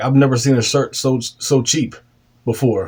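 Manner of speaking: ordinary talk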